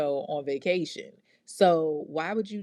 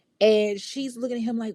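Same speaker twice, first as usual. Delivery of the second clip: normal talking voice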